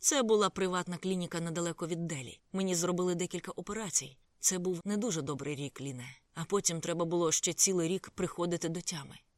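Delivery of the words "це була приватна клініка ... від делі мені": plain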